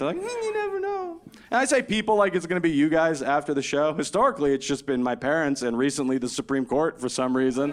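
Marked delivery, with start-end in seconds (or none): 0.2-1.2 very high, pitched-up, mascot-like character voice. Imitating people who doubt he is done having kids: Pillsbury Doughboy voice. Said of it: "they say it like the Pillsbury Doughboy".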